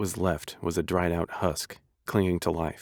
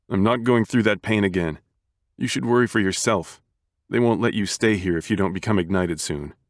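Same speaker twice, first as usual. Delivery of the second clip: loud, bitter, curt, clipped-short snap; 2 semitones higher, 5 dB louder than usual. Narrator reads a brother's reply to his brother, snapping back. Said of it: "[name] looked to the cane and back to his brother again, / who was struggling to his feet, pushing himself up with the help of his cane, / the man's head hanging as he bit back tears".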